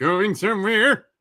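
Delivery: mock, cartoonish put-on Swedish accent. Reading a line aloud for laughs in a Swedish Chef mock Swedish accent. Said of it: "I can just read it like the Swedish chef".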